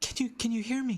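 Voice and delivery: high, soft, whisper-soft voice close in the ear. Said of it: "it's me, [name]".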